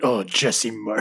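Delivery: play-acted, scornful, dismissive English pronunciation. Imitating how English people say a manager's name: imitating English disdain. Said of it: "English people say it with such disdain".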